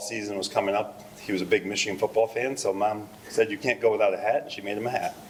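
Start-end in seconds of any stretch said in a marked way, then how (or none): none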